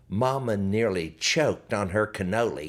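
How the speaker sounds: ordinary delivery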